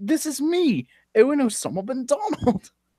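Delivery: squeaky, very high, put-on British accent. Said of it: "S-Mon is not talking in a British accent".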